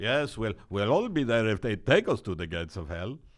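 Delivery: preaching voice. Mimicking the other speaker's line: imitating a rabbi voice. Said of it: "sometimes you do sound like a rabbi".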